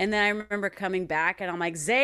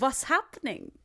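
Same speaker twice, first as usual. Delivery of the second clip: high, small, comic, put-on Indian accent; 5 semitones higher than usual. Explaining how Louie talked in tour video diaries, the speaker does Louie's little accent. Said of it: "He would do that little accent where he'd go".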